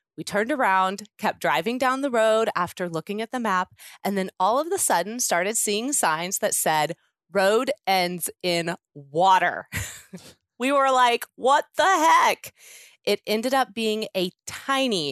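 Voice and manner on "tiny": emphasis placed on the word tiny. Retelling her road trip story about a ferry, emphasis on tiny. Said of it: "and she emphasizes the word tiny".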